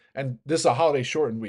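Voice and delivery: ordinary talk, nothing marked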